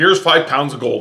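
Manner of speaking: usual speaking voice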